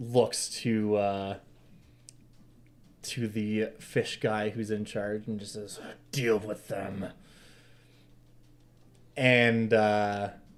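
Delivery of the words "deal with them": snarled voice, quieter. Voicing a knight who snarls an order to the leader: snarling. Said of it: "he just kinda snarls".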